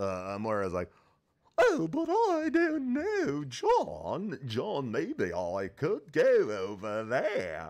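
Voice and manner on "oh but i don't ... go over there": put-on British-ish character voice. Taking a turn at doing Moira after spitballing, Moira voice slipping into British. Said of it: "I went into British".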